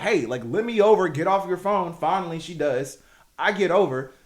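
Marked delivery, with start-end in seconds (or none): 0.0-1.9 loud screaming. Retelling trying to merge past a woman on her phone; re-enacting screaming at a lady. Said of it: "I'm screaming at this lady".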